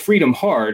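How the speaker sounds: the word "hard" given heavy stress.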